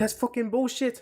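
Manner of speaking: badly done Irish accent, very high pitched. Recounting a fight with late punches after the bell, do a Conor impression, worst Irish accent. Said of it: "worst Irish accent in the fucking world".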